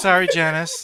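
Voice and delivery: put-on meek, cowed, henpecked, sorry-sounding voice. Retelling an in-character apology to janice: imitating a whipped voice. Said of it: "in a very whipped voice".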